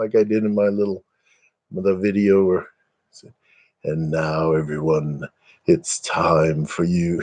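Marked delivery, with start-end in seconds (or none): 3.8-7.2 smooth, suave, low, slow voice. Describing voices from a video, the speaker does the suave guy voice. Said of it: "the suave guy".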